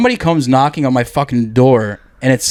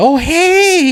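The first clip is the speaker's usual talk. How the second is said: mock, phony, cheery, very high-pitched fake-friendly voice. Acting out opening the door to an unannounced visitor: fake friendly greeting. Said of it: "put on some fake ass thing".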